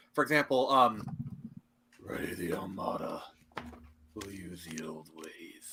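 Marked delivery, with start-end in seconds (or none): 2.0-5.7 sinister, dark, evil villain voice, whispered. Asked for an impression, doing a dark, evil villain voice. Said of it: "I do best with like really dark and evil voices. Like I can do villains".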